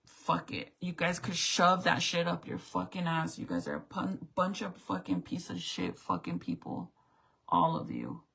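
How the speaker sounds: angry, fed-up, furious, cursing tirade. Retelling own words during a stressful fight with the team: retelling own angry outburst. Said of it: "I was so angry and pissed off about this whole situation that I'm just like".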